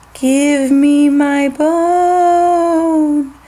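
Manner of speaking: put-on wee, teeny-tiny ghostly voice, "bone" drawn out. Reading a ghost story, voicing the voice from the cupboard in a teeny tiny voice. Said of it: "said the teeny tiny voice".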